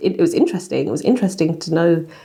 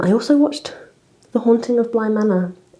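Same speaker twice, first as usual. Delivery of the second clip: sorrowful, mournful, sad, pitched-up voice; 5 semitones higher than usual. Naming a show just watched, sad voice. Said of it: "I say that in a sad voice".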